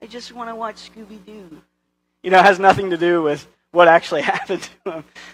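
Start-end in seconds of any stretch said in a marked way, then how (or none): 0.0-1.6 put-on high, hushed whiny toddler voice. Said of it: "And you say".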